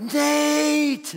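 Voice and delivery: rasping shouted whisper, high pitch, stretched long. Retelling calling a sleeping friend in a dark house: retelling a scream whisper. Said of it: "the scream whisper".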